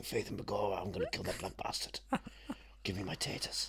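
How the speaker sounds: put-on stock stage-Irish accent. Joking with another speaker about an actor being properly Irish: Liam Neeson stage-Irish impression. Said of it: "He's proper Irish. He'll be saying".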